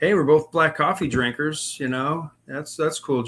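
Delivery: ordinary talk, nothing marked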